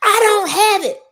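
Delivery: shrill, high, very loud screaming. Telling about a student without a temporary ID, imitating a student screaming. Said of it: "so the student scream".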